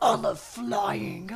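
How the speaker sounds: slow, deranged horse voice. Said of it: "he sounds deranged".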